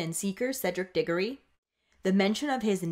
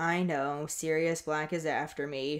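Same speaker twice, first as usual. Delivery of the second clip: sighing, low, flat, utterly bored monotone drone; 4 semitones lower than usual. Recapping the chapter, the speaker voices Harry answering McGonagall in a mock-bored monotone. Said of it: "in a really monotonous and bored tone".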